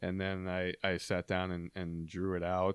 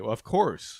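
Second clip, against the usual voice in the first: dry, knowing sarcastic tone; 4 semitones higher, 8 dB louder than usual. Retelling own usual reply to the other speaker's question: imitating a sarcastic reply. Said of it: "I'll say sarcastically".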